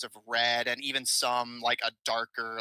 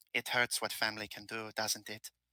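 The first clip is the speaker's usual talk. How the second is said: very quiet, soft, gentle and hushed; 9 dB quieter than usual. A man speaks so only you can hear, very quiet and gentle. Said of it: "he kind of gently speaks in a very quiet tone".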